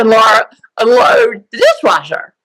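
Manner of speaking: sing-song elementary school teacher voice. Speaker retells her retired-teacher mother's order, in elementary school teacher voice. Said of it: "in that elementary school voice".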